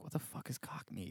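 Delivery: whispered under the breath.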